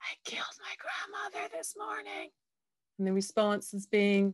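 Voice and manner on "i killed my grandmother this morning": very quiet, hushed whisper. Retelling what a man whispered to each ambassador in a reception line, retelling a whisper. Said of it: "he whispers in the ear of each ambassador".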